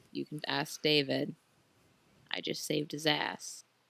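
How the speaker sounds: very quiet, hushed, said close under the breath. Playing a halfling character, leaning in to speak, very quiet. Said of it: "very quietly be like".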